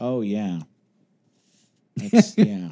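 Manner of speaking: heavily sarcastic, dripping, with swooping pitch. Agreeing that he is falling in love with the holiday: dripping sarcasm. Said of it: "you could just hear the sarcasm dripping".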